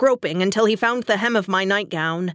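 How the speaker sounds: ordinary delivery, nothing marked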